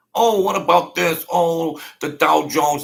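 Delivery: aggrieved complaining. Mocking millionaires who are pissed off every day: imitating pissed-off millionaires complaining. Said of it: "They're pissed off every day".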